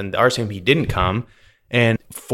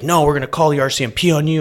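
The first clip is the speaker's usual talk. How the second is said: acted raised voices, higher pitch; 5 semitones higher than usual. Retelling how people at the border treated a seventy-three-year-old woman: retelling raised voices. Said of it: "they were like kind of raising their voices".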